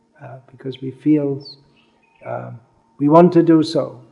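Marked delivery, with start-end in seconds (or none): 3.0-3.9 want stressed, pushed a little louder. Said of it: "because He wants us to do so".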